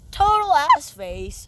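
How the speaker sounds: high, loud, slow voice crack. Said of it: "that was a voice crack".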